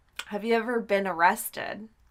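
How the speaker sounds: normal talking voice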